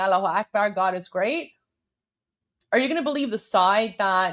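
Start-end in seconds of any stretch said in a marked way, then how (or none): none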